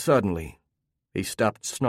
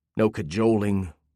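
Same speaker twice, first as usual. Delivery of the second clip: ordinary delivery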